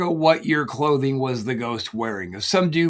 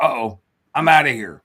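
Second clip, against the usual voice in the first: mock frightened, scared, spooked voice; 4 dB louder than usual. Acting out how a scared worker would react: imitating a scared person. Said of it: "If he was that scared".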